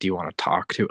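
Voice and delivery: put-on creepy delivery. Retelling what a man on a call asked about her, mock-creepy tone. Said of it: "Like he says it all creepy".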